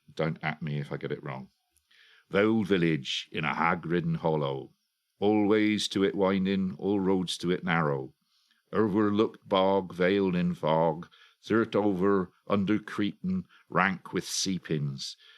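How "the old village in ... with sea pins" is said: English accent from Dorset. Read a little bit from a book aloud to give its flavour, in an attempted Dorset dialect. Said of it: "in my attempt at a Dorset dialect".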